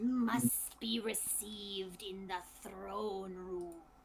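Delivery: broken, halting, low rasping voice. Game master voicing the skeletal driver again to the party: low, rasping, choppy voice. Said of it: "in a low, rasping voice, spoken in very choppy common".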